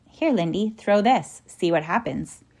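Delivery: plain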